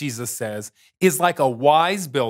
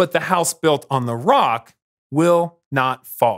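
ordinary talk, nothing marked

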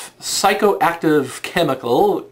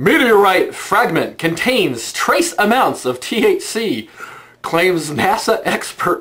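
words breaking up with laughter and giggles; 4 semitones higher than usual. Reading aloud a caption someone sent as a link, laughing while reading. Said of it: "I can't even fucking not laugh".

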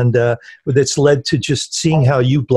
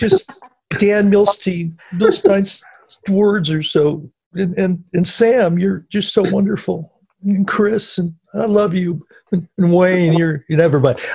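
fake crying, much higher pitch; 5 semitones higher than usual. Asked if they're crying, a speaker thanks the others, mock crying. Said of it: "I'm crying".

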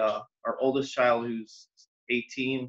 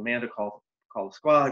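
ordinary talk, nothing marked

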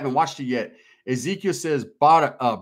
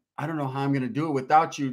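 put-on tearful, sad tone; 5 dB quieter than usual. Retelling a woman's reaction to the speaker leaving, imitating tearful sadness. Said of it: "She's like all sad with tears in her eyes".

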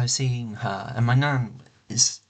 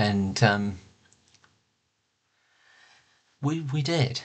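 hurting, emotional, holding back getting upset. Speaker talking about someone dearly loved, hurting and trying not to get upset. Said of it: "So you can tell I'm hurting today".

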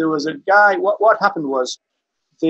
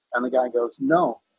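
ordinary talk

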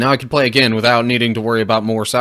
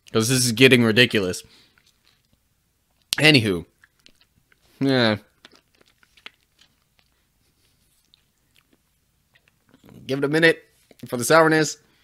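muffled speech with mouth full of candy; 4 dB quieter than usual. Eating sour candies, the speaker talks with four in the mouth. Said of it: "the fact that I have four of these in my mouth".

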